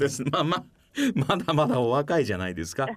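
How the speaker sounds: laughing through the words. Replying to the other speaker's remark, laughing while speaking. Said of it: "笑いながら言わなくてもね。".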